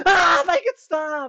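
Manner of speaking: shrill, very high, very loud, drawn-out scream. Acting out an imagined VR player in the corner: imitating someone screaming. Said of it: "in the corner just screaming".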